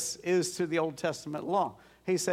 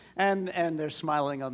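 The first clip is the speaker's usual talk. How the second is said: ordinary delivery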